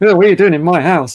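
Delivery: put-on gruff old man voice. Retelling meeting her husband the next morning: imitating a gruff old man. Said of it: "he was really gruff".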